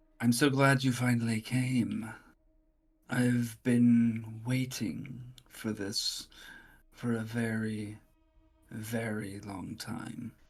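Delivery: voice-in-your-head style. Describing a voice the players hear as they climb the stairs: voice in your head. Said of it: "You hear a voice in your head".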